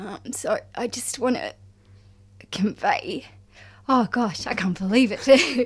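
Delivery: voice breaking as crying starts. Speaking of letting go of a beloved dog: starting to cry. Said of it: "and I'm starting to cry, sorry".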